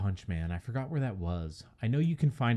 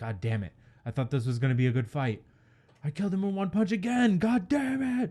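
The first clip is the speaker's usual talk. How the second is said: put-on very high, fed-up, rising frustrated outburst; 9 semitones higher than usual. Describing a character annoyed at winning in one punch, mock-frustrated outburst. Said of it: "he gets all mad".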